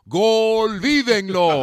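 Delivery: high, loud, mock sports announcer goal call.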